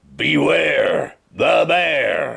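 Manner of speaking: big bear's rough, growling voice. Narrating a story where a bear's voice booms out: great growly booming voice. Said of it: "a great gr- growly voice boomed out".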